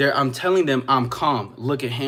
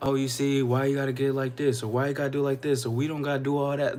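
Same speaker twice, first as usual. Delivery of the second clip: mock calm tone, quieter; 4 dB quieter than usual. Imitating someone who stays composed during an argument: imitating a calm voice. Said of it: "like a calm voice".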